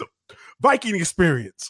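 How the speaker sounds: mock stutter and stammering pause. Retelling how someone hesitated while saying it, imitating a stutter and pause. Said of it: "he kind of stuttered, like paused".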